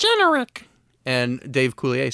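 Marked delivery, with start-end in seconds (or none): 0.0-0.7 very high, loud, squeaky character voice. Showing the others how Bobby sounds: Bobby's World voice. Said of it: "Bobby sounds like this".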